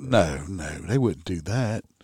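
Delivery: obviously sarcastic, knowing tone. Telling the story of a woman who complained about a deputy, sarcastic tone. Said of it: "If y'all don't hear sarcasm in my voice".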